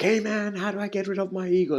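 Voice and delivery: desperate, freaked-out voice. Retelling a man asking a sage about his ego: imitating a man freaking out. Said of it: "The guy was freaking out".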